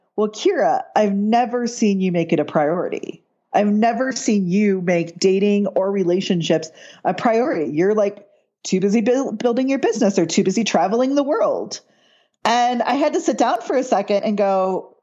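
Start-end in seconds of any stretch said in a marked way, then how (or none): none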